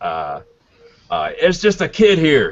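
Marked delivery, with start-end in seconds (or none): 1.4-2.5 high yelling voice carrying loudly. Voicing a dock hand who calls to the magistrate: dock hand yelling out. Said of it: "yells out".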